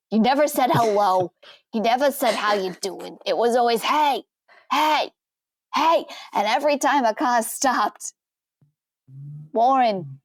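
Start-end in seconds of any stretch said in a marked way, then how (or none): 3.8-6.0 mock repeated shout, pitched up. Recalling a man who shouted at every passing car, the speaker is imitating his shouting. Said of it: "he'd always shout".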